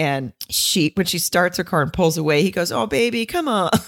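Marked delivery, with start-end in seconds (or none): 2.7-3.7 sweet, nice, slightly raised delivery. Retelling a scene where a woman drives off: nice Eric Roberts impression. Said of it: "the way he says it, it's just so nice".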